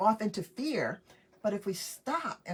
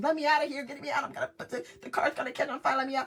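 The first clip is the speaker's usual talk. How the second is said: put-on frantic, high, rushed, rattled-off panicked cries; 6 semitones higher than usual. Retelling being stuck in a car after a crash: retelling a panicked scream. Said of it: "I'm screaming".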